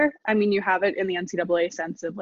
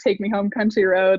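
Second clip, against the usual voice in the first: ordinary talk, nothing marked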